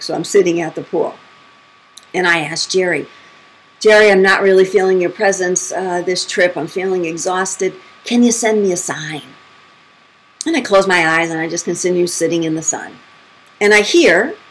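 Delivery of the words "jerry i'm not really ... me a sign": plain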